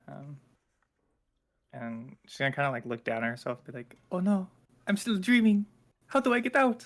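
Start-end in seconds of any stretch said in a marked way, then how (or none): 4.1-6.9 high, loud, alarmed, panicked cry. Playing a character who wakes up thinking she is still dreaming: panicking. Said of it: "she's kind of panicking right now".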